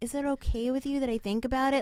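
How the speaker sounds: nasty, high, snide, sarcasm-laden tone. Retelling how a mother in the episode replies: imitating a sarcastic tone. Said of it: "says it in, like, such a shitty way".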